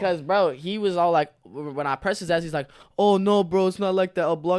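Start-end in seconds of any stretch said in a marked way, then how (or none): 3.0-4.6 put-on Indian accent with raised voice. Retelling what he said when pressed about it: imitating an indian accent. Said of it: "He did the accent and everything".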